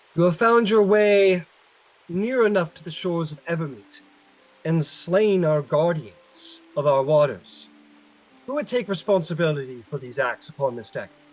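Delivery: loud, high-pitched warrior elf character voice. A game narrator voices a warrior elf addressing the players, loud warrior elf voice. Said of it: "speaks loudly and says".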